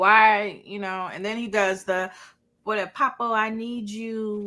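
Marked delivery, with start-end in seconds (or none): 2.6-4.5 mock baby voice, baby talk. Imitating a drama character pleading, "I need you": mock baby talk. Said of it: "please don't go to the baby talk".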